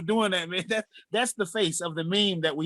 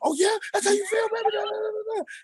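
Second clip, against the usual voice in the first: very high-pitched, put-on, fake taunting bravado. Retelling turning a staged confrontation back on: imitating own fake angry act. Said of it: "I turn it back on".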